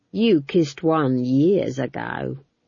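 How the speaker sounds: very slow, smug, drawn-out, ripe joking tone. Narrator reading a guard speaking to McGrath, slow, ripe, self-amused tones. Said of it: "in the slow, ripe tones of one who thinks that what he's about to say next is going to be incredibly funny".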